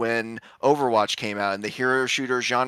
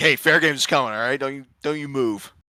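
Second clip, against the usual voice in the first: playful, joking, put-on menacing tone. Joking about being forced to play a game at gunpoint: mock threatening, gun to head. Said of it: "gun to my head".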